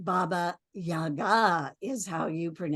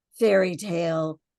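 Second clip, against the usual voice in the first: plain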